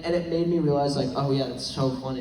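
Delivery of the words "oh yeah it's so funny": ordinary delivery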